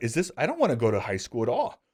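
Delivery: ordinary delivery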